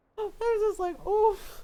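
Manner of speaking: usual speaking voice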